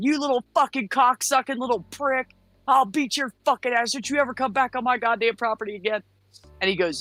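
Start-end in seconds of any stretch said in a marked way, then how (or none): 0.0-6.0 acted-out yelling, much higher. Retelling chasing a man across a parking lot, the speaker re-enacts yelling at him. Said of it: "So I'm just yelling at him".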